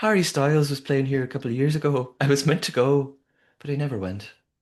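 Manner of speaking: put-on Irish accent. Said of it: "I'm gonna do Irish accents throughout this".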